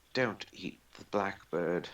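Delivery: hushed whisper. During a role-play game, whispering a warning to a creature eyeing a blackbird: whispering. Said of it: "whispering to her".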